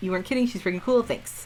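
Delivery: plain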